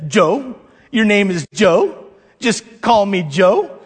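acted, slow, dry, sarcastic tone. Recalling You've Got Mail, the speaker quotes Meg Ryan, mock-sarcastic. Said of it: "sarcastically says".

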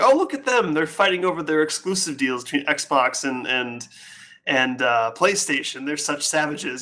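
ordinary delivery

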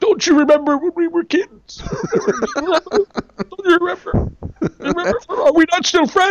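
very high, heavy-breathing, wheezing put-on voice. Mocking an actor's unneeded character voice, in a heavy-breathing put-on character voice. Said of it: "That's pretty good, actually".

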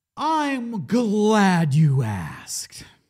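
high, swooping, very slow, drawn-out delivery. Answering a question about the movie rating: Jim Carrey voice. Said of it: "That's my Jim Carrey impression".

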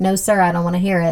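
ordinary talk

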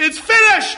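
loud, very high, ringing outcry. Preaching on the crucifixion, echoing what was cried on the cross, retelling a loud cry. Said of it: "cried with a loud voice".

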